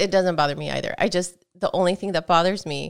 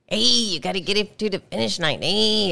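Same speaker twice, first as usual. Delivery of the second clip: put-on thick Spanish accent, punching the final "hey"; 3 semitones higher than usual. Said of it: "why does he emphasize the last word all the time?".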